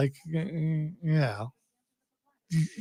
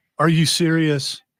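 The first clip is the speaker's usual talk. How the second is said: plain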